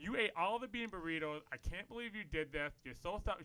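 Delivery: angry, scolding mom rant, on a tear. Retelling mom's angry rant about the burritos: imitating mom ranting. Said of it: "she's just on this line".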